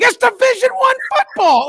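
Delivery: mock screaming. Speaker acting out a calm man who suddenly starts screaming: retelling a sudden scream. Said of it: "starts just screaming".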